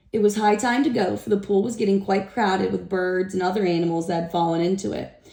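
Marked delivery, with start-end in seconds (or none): none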